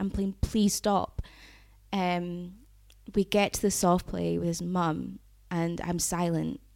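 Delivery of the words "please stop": put-on begging, pleading tone. Retelling begging a driver to stop the car: imitating own past begging. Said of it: "I'm begging to get out of the car".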